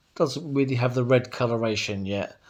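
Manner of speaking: usual speaking voice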